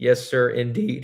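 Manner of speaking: voice cracking. Welcoming someone back after a long time, speaker answers, voice cracking. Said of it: "Oh, voice crack".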